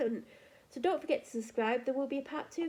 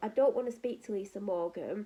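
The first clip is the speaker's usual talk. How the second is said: ordinary talk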